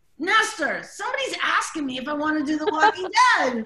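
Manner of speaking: mock thrilled, high, swooping, bursting with excitement. Retelling telling her husband about an offer: imitating own past excitement. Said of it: "And I was, like, excited".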